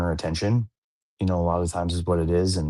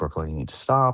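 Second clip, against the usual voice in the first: plain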